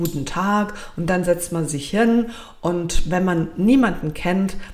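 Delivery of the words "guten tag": ordinary delivery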